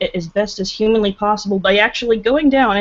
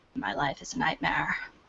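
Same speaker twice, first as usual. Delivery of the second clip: hushed, low, breathy, creaky, whispery vocal fry; 5 semitones lower, 14 dB quieter than usual. Showing off an impersonation: low creaky voice. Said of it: "I can do a good a good uh, impersonation".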